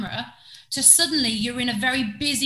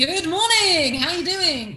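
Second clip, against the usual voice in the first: higher, put-on on-air radio presenter voice; 5 semitones higher, 4 dB louder than usual. Describing starting out in radio, showing the voice the mic brings out: put-on radio voice. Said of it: "What is this voice?".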